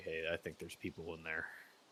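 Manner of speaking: barely-there, hushed, very quiet half-whisper. Half-whispering a warning to the party at a door: half-whispering. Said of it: "I'm gonna kind of whisper back and say".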